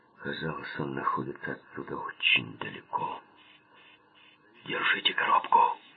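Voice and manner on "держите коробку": hushed whispering. Reading a story, a character whispers to a companion in the dark: whispered. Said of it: "прошептал Паркер".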